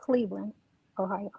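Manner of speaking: barely audible, low, hushed half-whisper. A caller answers the host asking where she's calling from, half-whispering. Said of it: "Why you whispering?".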